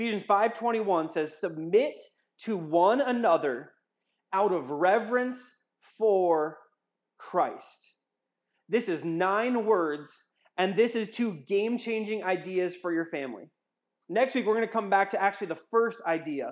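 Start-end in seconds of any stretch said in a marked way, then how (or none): 1.4-7.9 slow, deliberate, halting reading with mid-phrase breaks. Reading a bible verse aloud for listeners to follow along, reading slowly. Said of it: "I'm gonna read it real slow".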